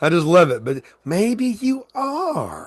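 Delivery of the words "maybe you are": very high, swooping cowgirl drawl with are stretched. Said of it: "your cowgirl accent".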